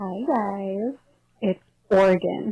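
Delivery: sultry voice. Greeting the hosts in a recorded audio clip: sultry voice. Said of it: "Very sultry voice [name] has".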